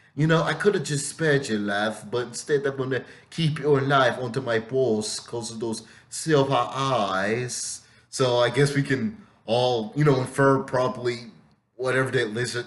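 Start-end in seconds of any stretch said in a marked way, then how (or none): 0.5-7.9 put-on heavy British accent throughout. Retelling what she said, in a strong British accent. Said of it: "she had this really strong Stalky British accent".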